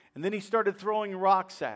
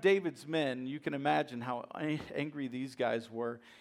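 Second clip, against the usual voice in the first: usual speaking voice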